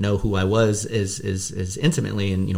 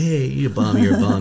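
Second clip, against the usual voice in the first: play-acted, slow, playful teasing tone; 4 dB louder than usual. Speaker retells jokingly calling his dad a bum, retelling speaking jokingly. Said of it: "I jokingly".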